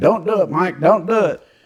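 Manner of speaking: put-on shrill, frantic, very high screamed voice. Retelling how someone screamed at him not to do it: imitating Bob screaming. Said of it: "Bob's screaming at me".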